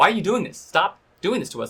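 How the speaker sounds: put-on screaming, high-pitched and intense. Recounting screaming in her face while holding her down, retelling own screaming. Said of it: "screamed in her face like".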